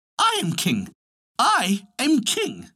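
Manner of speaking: tiny, very high little bird voice. A little bird cries out of a mouse hole that it is king, in a small bird voice. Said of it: "cried out of it with its small voice".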